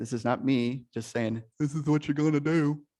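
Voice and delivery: put-on dumb guy voice. Opening a master class and telling everyone they will participate, in a dumb guy voice. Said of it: "I just did the dumb guy voice".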